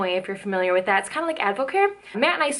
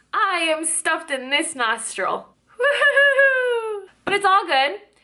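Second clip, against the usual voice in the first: yelling, very loud, higher; 10 semitones higher than usual. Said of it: "I feel like I'm yelling".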